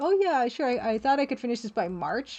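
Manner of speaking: plain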